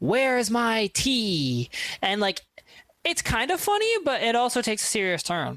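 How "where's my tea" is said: irritated, angry, with the last word drawn out. Recounting a woman's impersonation of her mother, imitating a mother's angry demand. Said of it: "her mother would get mad when they ran out".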